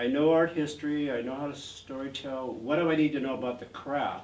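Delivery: ordinary delivery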